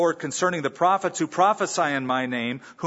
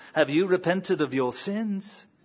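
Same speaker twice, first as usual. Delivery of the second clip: put-on English accent, higher pitch; 4 semitones higher than usual. Retelling how Malcolm Wilde asked a woman again, imitating his English accent. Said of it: "said in his great English accent".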